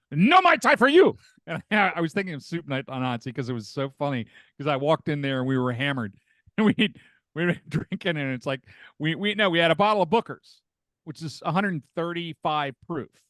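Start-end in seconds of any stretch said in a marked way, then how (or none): 0.2-1.2 high, loud woman's yell. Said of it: "the lady yells at me".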